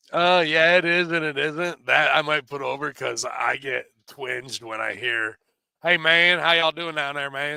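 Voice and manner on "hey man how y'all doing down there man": put-on, heavy backwoods Kentucky drawl. Imitating a greeting that makes the speaker twinge: deep Kentucky backwoods accent. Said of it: "That fucking deep Kentucky backwoods accent".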